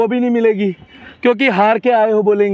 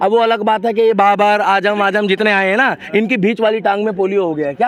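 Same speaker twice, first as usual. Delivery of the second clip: ordinary talk, nothing marked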